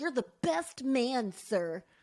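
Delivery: put-on cute, small, nasally little kid voice. Retelling how a group kept addressing a man, in a little nasally voice. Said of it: "they like had these little nasally voices".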